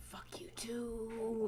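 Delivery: soft, hushed whispering. In a role-play scene, a character walking under a stormless sky whispers very quietly. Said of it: "She whispers very quiet".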